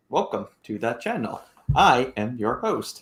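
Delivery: slow, stiff, stilted robot-like voice. Imitating the other host's opening, imitating stilted robotic talk. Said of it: "very stilted".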